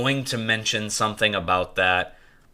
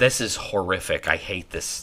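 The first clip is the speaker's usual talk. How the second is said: ordinary talk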